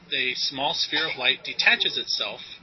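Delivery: ordinary delivery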